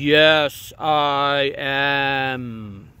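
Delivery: enormous giant voice, drawn-out "am". Narrator reads a giant fish answering the man who caught it, enormous, gigantic voice. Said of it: "it said in an enormous, tremendous, gigantic voice".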